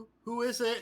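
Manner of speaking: put-on very high young woman's voice. Narrating a scene, speaking as a woman answering the player's knock, in a young woman's voice. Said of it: "a young woman's voice say".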